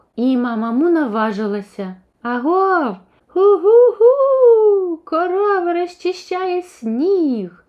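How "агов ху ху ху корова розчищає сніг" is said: slow, very high, drawn-out hollering shout. Narrator reads a cow coming down a snowy children's slide, shouting. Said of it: "закричала вона".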